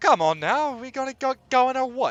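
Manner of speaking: very high, loud, attempted Cockney accent. Voicing a character in a group scene, attempting a Cockney accent. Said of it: "trying for a Cockney accent?".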